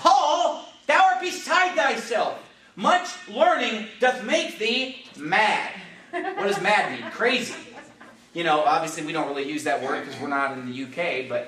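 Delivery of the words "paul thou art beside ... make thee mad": sudden, full-throated, loud, drawn-out yell, pitched high. Preaching a sermon, acting out a man yelling at the preacher: retelling a loud yell. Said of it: "Festus just yells out with a loud voice".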